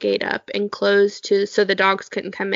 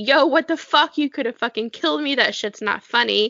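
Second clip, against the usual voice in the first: mock screaming; 3 semitones higher than usual. Retelling getting up and screaming at their brother, retelling screaming at brother. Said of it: "started screaming at my brother".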